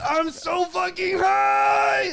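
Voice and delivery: mock long drawn-out, very high, very slow swooping scream. Retelling a roommate getting high, imitating someone screaming. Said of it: "that's when he starts screaming".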